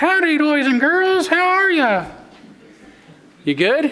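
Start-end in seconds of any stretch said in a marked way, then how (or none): 0.0-2.1 squeaky, high-pitched, sing-song delivery. A host introduces a favorite guest to boys and girls: Mickey Mouse voice. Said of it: "this is one of my favorite guests, Mickey Mouse".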